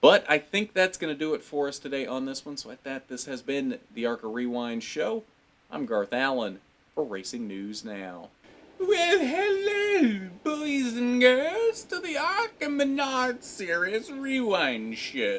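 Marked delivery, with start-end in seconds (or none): 8.8-15.4 very high, swooping, sing-song silly put-on voice. A racing show host signs off, then greets boys and girls in a put-on voice. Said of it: "I should do the whole show in this voice".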